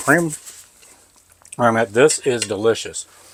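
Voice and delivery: speaking with mouth full of food. Tasting the dish after a second bite, talking with mouth full. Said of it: "talk with my mouth full".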